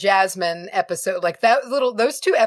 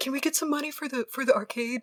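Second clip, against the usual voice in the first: put-on soft, small, polite little kid voice; 4 semitones higher, 8 dB quieter than usual. Retelling how two visitors asked, imitating little kids asking. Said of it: "little kids being like".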